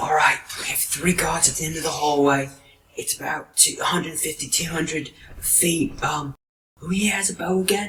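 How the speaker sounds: hushed voice. Narrating a character who addresses the group, in a hushed tone. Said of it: "in a hushed tone".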